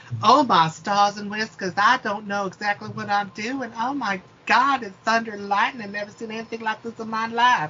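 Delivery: high, put-on, laid-on Southern belle accent. Describing a new character, the speaker slips into a put-on Southern belle voice. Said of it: "And when I say Southern Belle, I mean".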